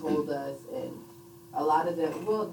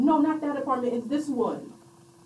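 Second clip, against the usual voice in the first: man's high-pitched screaming; 10 semitones higher, 6 dB louder than usual. Recalling waking to a man screaming outside the window: retelling a man screaming. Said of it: "there was a man screaming".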